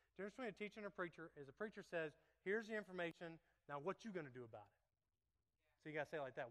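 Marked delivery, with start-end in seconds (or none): 3.7-4.8 put-on New Jersey accent, low and quiet. A preacher shows listeners how a preacher should say it, in a jersey accent. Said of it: "like if in Jersey or something".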